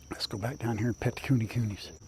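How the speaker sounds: soft, very quiet, hushed whisper under the breath. Talking near the pig pens, careful not to wake a pig, whispering. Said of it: "Why am I whispering?".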